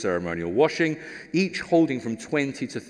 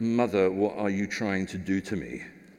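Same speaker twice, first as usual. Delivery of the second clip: put-on muttering under the breath, lower; 4 semitones lower, 3 dB quieter than usual. Imagining Jesus answering his mother: imitating Jesus muttering under his breath. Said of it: "saying under his breath".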